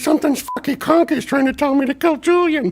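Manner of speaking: very high, squeaky put-on voice. Recalling the Conky episode with the puppet: Bubbles impression. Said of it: "pretty good imitation".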